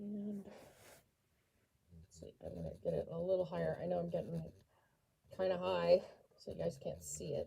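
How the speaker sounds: heavy audible breathing. Measuring something out on camera for viewers, heavy audible breathing. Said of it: "You can hear me breathing".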